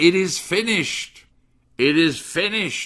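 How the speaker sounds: put-on triumphant cry, loud and high-pitched. Speaker retelling the scripture's account of a final cry, reenacting a loud, triumphant cry. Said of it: "he said with a very loud, triumphant voice".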